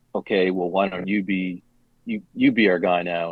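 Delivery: plain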